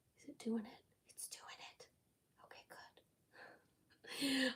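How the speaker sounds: hushed whisper, barely voiced and very soft. During a crackle paint demonstration, the speaker checks whether it is working, whispering. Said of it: "I'm whispering because".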